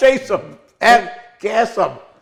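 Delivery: put-on screaming. Retelling how he shouts at the people on the tv: retelling screaming at the tv. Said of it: "Because I'm screaming at them".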